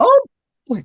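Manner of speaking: squeaked out high and loud. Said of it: "like Mickey Mouse".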